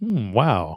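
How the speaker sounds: acted, impressed "wow". Repeating the line when asked: repeating the surprised "wow" on request. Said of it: "Say that again?".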